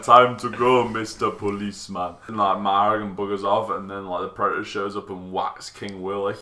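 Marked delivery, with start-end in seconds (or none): 0.0-2.2 terrible fake Jamaican accent, slow. Recapping a movie scene, a speaker quotes a character in a bad Jamaican accent. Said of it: "worst Jamaican voice I've ever seen".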